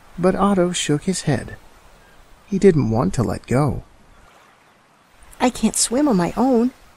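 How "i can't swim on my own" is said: frightened squeal, very high. Clinging to Mom, he refuses to let go, squealing. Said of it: "he squealed".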